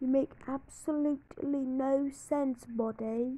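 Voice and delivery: little put-on British accent. Answering someone who says your channel has no fans: little british accent. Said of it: "that was my little British accent right there".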